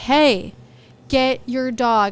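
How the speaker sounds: put-on very slow, hostile, unfriendly tone. Retelling a warning to the owner of an off-leash dog, mock unfriendly tone. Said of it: "speaking in a tone that was obviously not very friendly".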